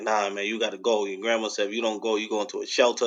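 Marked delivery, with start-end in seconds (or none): none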